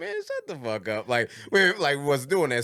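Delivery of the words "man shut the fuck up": laid-back, offhand, casually cool tone. Showing how the phrase was said casually back then: imitating a cool casual insult. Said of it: "in a cool way".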